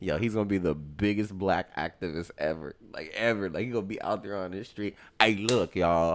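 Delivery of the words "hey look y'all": put-on Texan-style accent. Imagining a father complaining about his son, imitating a Texas accent. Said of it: "Now he's from Texas".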